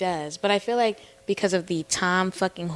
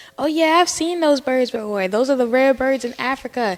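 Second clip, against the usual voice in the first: pitched-up granny voice, patient and explanatory; 5 semitones higher, 3 dB louder than usual. Retelling a video where a grandma explains a bird: imitating a grandma explaining. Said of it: "the grandma's, like, trying to explain to the granddaughter".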